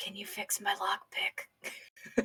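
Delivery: whispering. Asking a small companion to fix a lockpick: whisper. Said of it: "I'm gonna whisper Zolo".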